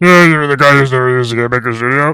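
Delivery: goofy, put-on, fake deep low voice. Mocking a critic with a put-on deeper voice. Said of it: "talk like a fucking normal human being".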